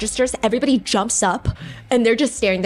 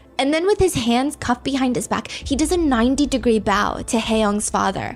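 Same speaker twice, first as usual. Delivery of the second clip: normal talking voice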